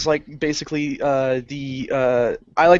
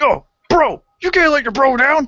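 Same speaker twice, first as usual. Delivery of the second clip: very high, loud, egging-on frat-bro voice; 11 semitones higher, 6 dB louder than usual. Quoting a guy double-fisting beers and urging him on, in inner frat boy voice. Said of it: "my inner frat boy".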